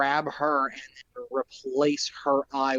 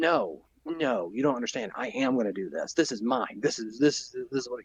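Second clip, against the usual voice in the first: play-acted child throwing a stubborn tantrum. Explaining a character's violent reaction: imitating a child's tantrum. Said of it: "it's a child throwing a tantrum".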